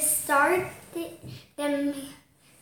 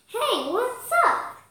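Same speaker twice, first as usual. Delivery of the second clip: eager, keen, excited, pitched-up voice; 7 semitones higher than usual. Ellie greets Amy and Marion at school: excited. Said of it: "Ellie said excitedly".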